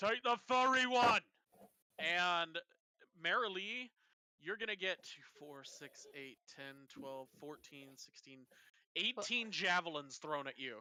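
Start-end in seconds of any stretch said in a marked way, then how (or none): 0.0-1.2 high, raised yelling in an orc voice. Voicing an orc calling from above during a fight: orc yelling. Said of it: "one of the orcs yell out".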